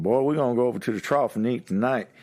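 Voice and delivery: put-on Texas accent. Describing a father with a strong Texas accent; strong Texas accent. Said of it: "he's super Texas accent".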